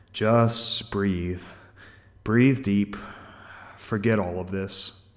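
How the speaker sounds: soft, low, weary murmur, almost to himself. Narrating a man speaking to a pleading woman as the gas turns on, softer tired voice. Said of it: "Softer voice, but still tired, almost speaking to himself".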